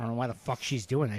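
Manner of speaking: put-on muttering under breath. Retelling a relative's remark about another during a car trip: imitating someone muttering under their breath. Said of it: "Under their breath".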